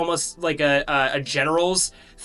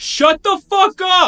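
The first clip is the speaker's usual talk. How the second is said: put-on very high-pitched, loud, drunken yell; 7 dB louder than usual. Voicing a drunk guard banging a tankard on steel bars: drunk guard yelling. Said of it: "yelling at the prisoners".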